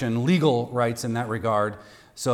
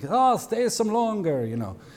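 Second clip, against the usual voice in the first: terrible put-on Italian accent, very high pitched; 10 semitones higher than usual. Retelling a father urging his visitors to stay longer, terrible Italian accent. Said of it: "I think like Italian".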